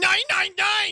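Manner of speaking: very loud, very high, shrill, cartoonish angry German-accented barking. Showing how "nine nine nine" sounds said by an angry German: angry German shout. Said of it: "sounds like a pissed off German".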